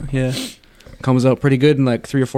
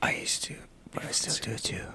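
soft, unvoiced whisper. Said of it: "Let's just whisper about him".

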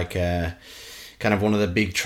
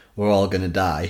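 ordinary talk

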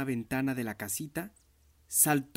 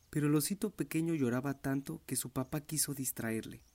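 plain reading voice

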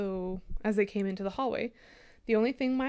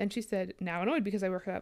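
plain reading voice

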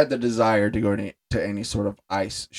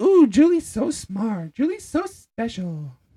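very high, taunting, mocking voice; 12 semitones higher than usual. Recapping a scene, voicing Rachel as Ross kisses Julie: Rachel's mocking voice. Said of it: "Rachel then mockingly says".

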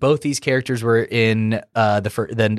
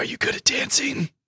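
breathy, hushed whispery voice, breathed out; 5 dB quieter than usual. Discussing an actress's Nebula voice with a co-speaker, the speaker tries a breathy Nebula voice. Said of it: "That's my Nebula interpretation".

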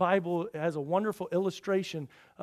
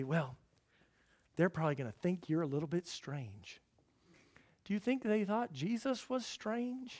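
whispering voice. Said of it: "whisper in your ear and say".

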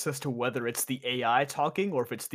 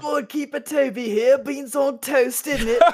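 very high, very loud fake British accent; 13 semitones higher, 10 dB louder than usual. Teased by a friend about a bad accent, the speaker tries a put-on British accent. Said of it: "you got to do a british accent one time".

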